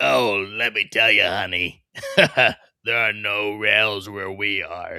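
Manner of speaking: smoky-voiced smoker lady character voice. Joking with John in a put-on character, smoking lady voice. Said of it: "your voice got all smoking lady".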